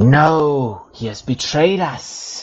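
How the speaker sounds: shrieking hag voices calling out, high and slow. Narrating the hags calling out over the wind as the party flees, shrieking. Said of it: "shrieking voices carrying over the wind".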